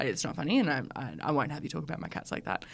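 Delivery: low, grave, earnest, very serious tone. Retelling what Tom said about a joke on the cats: imitating someone speaking very seriously. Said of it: "he very seriously was like".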